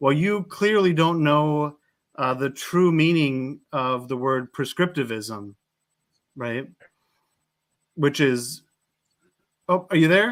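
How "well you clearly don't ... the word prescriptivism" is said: ordinary talk, nothing marked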